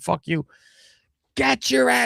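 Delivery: acted-out raw child's scream, high, rough, climbing up. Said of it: "I was yelling at the fucking T V".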